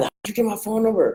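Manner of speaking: irritated, angry voice, pitched high. Speaker telling colleagues how people call back about the voicemails: mock-angry caller. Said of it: "and they're mad".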